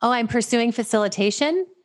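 hesitant, tentative tone. Imitating how they sound as if asking permission, mock-tentative. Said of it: "I sound like I'm asking permission. ... So it sounds something like".

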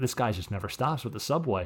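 ordinary talk

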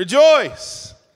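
all-out exclamation, very high, shrill and loud. Reading a Bible passage aloud and retrying the word as a bigger exclamation. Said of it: "I think I can do better".

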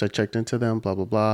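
ordinary talk

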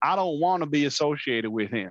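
imitated Southern accent. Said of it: "You have to say that with a Southern accent".

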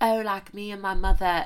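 put-on English accent slipped into, put on. Speaker acts out what a woman said about the royal family, in an English accent. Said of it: "sorry, that's an English accent".

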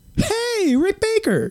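very high voice, breaking and cracking. Retell Butch calling out to Rick Baker by the editing rooms, imitating Butch's voice cracking. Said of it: "his voice cracked and everything else".

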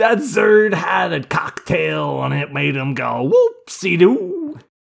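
bad, shrill, loud squealing voice with wild swoops. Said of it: "Bill Cosby and my bad voices".

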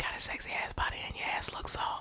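soft, unvoiced, sleazy whisper. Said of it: "Let me whisper in your ear".

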